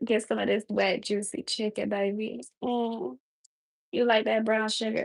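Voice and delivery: put-on, fake seductive, sexy voice. Talking to a stream audience while cooking: fake cooking sexy voice. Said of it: "my fake cooking sexy voice".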